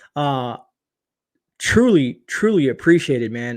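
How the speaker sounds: voice catching, choked up with emotion. Streamer thanking a viewer for the biggest super chat he's ever received: choked up. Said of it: "you're getting me choked up".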